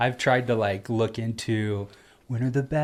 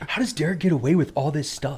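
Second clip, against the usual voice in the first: wistful voice, raised pitch; 5 semitones higher, 4 dB louder than usual. Retelling what a brother-in-law says on the side: Cody impression. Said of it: "That's a great Cody impression".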